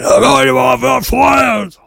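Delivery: put-on high, loud shouting in Austrian accent.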